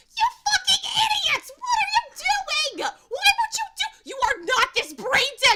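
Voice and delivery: enraged, shrill, furious screaming, very high, very loud. Describing a character berating her companions, acting out a furious outburst. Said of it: "furiously slap at your shin. She's like".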